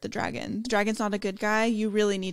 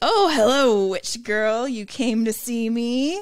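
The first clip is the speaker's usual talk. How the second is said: put-on cruel mocking tone with mean laughter; 6 dB louder than usual. Retelling how a character taunts a witch girl, the speaker does a mock taunt with mean laughter. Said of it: "taunting everybody in that really mean, like, laughing while he says it".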